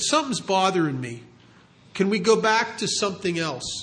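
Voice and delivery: ordinary talk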